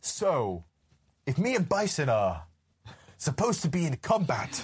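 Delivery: put-on delivery, said in short separate chunks. Imitate an actor who seems to be remembering his line, like a really bad Captain Kirk. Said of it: "Like a really shit, like, Captain Kirk".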